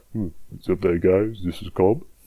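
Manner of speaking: forced, put-on voice, way too deep and soft. Speaker recalls greeting viewers in his first mic videos, fake deep voice. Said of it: "making my voice like way too fucking deep".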